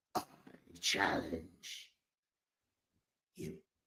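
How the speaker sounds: whispered, breathy character voice, barely voiced. Challenging the others to face the boss: Shredder voice. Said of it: "In my own Shredder voice".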